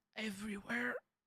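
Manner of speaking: high-pitched, pained cry, sounding hurt all over. Showing how a hurt patient should answer a doctor: sounding in pain. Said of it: "sound like you're in pain at least".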